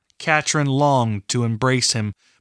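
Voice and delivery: ordinary delivery, nothing marked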